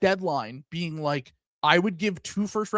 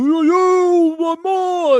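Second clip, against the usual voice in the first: shrill, very high, raised whooping holler; 13 semitones higher, 12 dB louder than usual. Complaining about visiting fans at the arena, imitating fans hooting and hollering. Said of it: "they hoot and holler".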